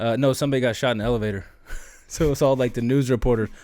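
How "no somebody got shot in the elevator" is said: breezy, offhand, matter-of-fact, nonchalant tone. Retelling how a reporter answered the question of what was going on: imitating a nonchalant reporter. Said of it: "the dude just like nonchalantly goes".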